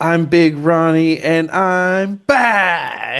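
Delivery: put-on scream, very slow, high, stretched out. Retelling a movie scene where a character pumps his fist: imitating a scream. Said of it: "and screams".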